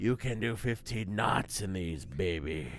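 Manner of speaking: low, gravelly little-man character voice. Narrating a story, voicing the little man with the motorboats, in a gravelly voice. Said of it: "in a gravely voice".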